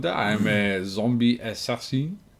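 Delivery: fake, put-on French accent. Voicing a French zombie assassin character: put-on French accent. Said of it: "I will stop doing that voice".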